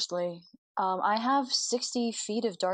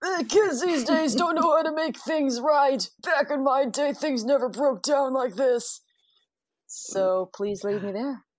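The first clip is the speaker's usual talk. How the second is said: put-on elderly man voice, higher and louder; 4 semitones higher, 5 dB louder than usual. Playing an old man character heading to the map room: old man voice. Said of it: "the voice you're using".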